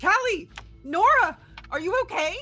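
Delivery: very loud, high-pitched calling-out yell. Calling out for the other characters in the scene: yelling for friends. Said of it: "I'd be, like, uh, yelling for them".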